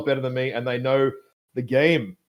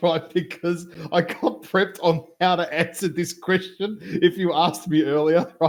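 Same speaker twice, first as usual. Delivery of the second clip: talking through laughter, higher; 5 semitones higher than usual. Explaining that they were prepped for this question, laughing while talking. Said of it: "I'm laughing so much".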